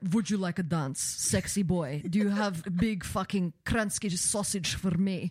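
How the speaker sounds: put-on Russian accent. Acting out a made-up role-play character named Svetlana, fake Russian accent. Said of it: "I'm going to say like Russian for you".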